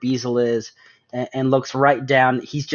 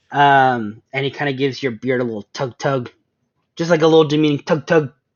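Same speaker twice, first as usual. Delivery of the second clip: normal talking voice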